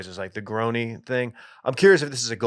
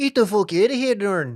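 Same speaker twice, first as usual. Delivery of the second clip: very high-pitched put-on Irish accent; 9 semitones higher than usual. Asked to do the accent of the man who swore at Dorn, imitating the man's accent. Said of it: "do his accent".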